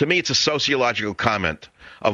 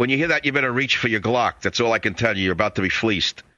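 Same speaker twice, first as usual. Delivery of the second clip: plain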